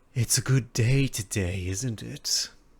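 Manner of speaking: sly, crafty, cunning voice. Narrating a scene, the speaker voices someone addressing the listener from the water, sly voice. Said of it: "you hear a very sly voice speak to you".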